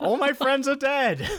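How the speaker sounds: mock, very high, sudden blurted-out shout. Retelling a man walking down to the green, retelling a shout. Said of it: "he just shouts out".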